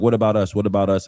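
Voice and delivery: ordinary talk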